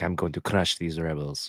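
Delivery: soft, hushed, put-on vampire accent. Voicing Thrawn while showing off new items, Thrawn in a vampire accent. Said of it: "Why did I do that accent?".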